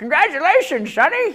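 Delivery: put-on very loud, shrill, very high old prospector voice. Speaker imagining himself old at the boy's graduation: old man voice. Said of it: "I only have one old man voice".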